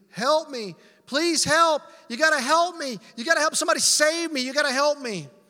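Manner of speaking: very loud, high, full-throated shouting. Telling a story, acting out a dangling man yelling up across a ravine: retelling a yell. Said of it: "he's yelling up across the ravine".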